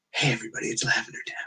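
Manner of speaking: soft, breathy, husky, half-whispered tone. Describing a woman whose voice they fall asleep to: imitating a husky voice. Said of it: "she's got like this husky voice".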